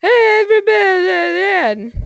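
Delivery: put-on very high, drunken-sounding voice. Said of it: "I'm still drunk".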